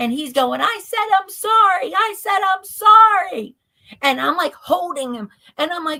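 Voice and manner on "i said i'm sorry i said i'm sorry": shrieking, very high, slow and drawn-out scream. Retelling what a man screamed as they were both dragged out: retelling a scream. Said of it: "by then I'm like bawling".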